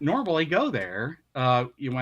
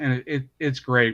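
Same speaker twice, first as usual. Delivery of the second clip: ordinary talk, nothing marked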